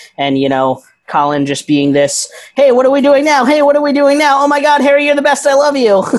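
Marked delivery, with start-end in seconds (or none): 2.6-6.1 put-on very high, fast, eager, overexcited little-boy babble. Imitating an annoyingly excited younger fan: imitating an overexcited fan. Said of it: "this little obnoxious little jumping up and down boy".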